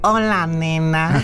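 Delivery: put-on nasal voice, through the nose. Explaining a greeting they share, then saying it in a nasal voice. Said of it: "con voz nasal".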